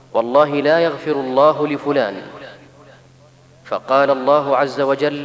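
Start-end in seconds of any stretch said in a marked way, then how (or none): none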